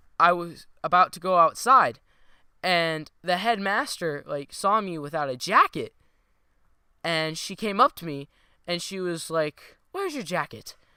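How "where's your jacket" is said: put-on posh, snooty, very fancy upper-class English accent. Retelling the headmaster asking where the speaker's jacket is, in a very fancy English accent. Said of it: "In a very, very fancy English accent".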